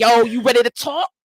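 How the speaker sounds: loud, mock aggressive, confrontational, armored-up tone. Retelling how they opened a hard talk: retelling own aggressive question. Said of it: "let me come a little bit aggressive with it".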